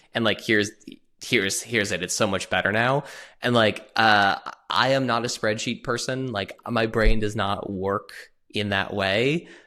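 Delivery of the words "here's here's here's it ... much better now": ordinary talk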